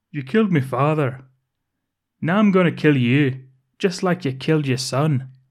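put-on accidental drift into Scottish accent. Retelling a scene, quoting a character's line, slipping into a Scottish accent. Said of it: "I think you went Scottish".

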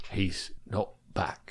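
very quiet, breathy whisper. Discussing how a line would sound, speaker does Rufus Scrimgeour voice. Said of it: "Rufus Scrimgeour would have been more like".

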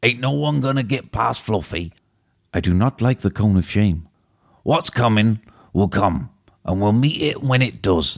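put-on giant's voice with a Yorkshire accent. Doing a movie impression of Hagrid: Hagrid voice, a bit Yorkshire. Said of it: "I went a bit Yorkshire at the end".

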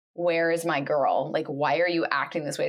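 put-on angry tone. Retelling a character's reaction on finding out: imitating someone mad. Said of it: "she's, like, mad".

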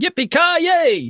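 put-on high, slow, drawn-out child's yell. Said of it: "my eight-year-old kept yelling".

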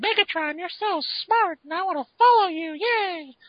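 very high, loud, squeaky mouse voice. Describing an alternate-universe Starscream who adores Megatron: Mickey Mouse-like Starscream voice. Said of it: "Starscream turned into Mickey Mouse".

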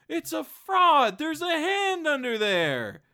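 very high, swooping, shrill, drawn-out scream. Retelling a scene where a nun stands up, imitating a nun screaming. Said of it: "a nun stands up and just starts screaming".

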